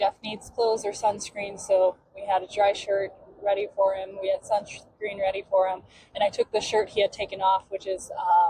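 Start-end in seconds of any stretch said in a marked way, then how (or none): none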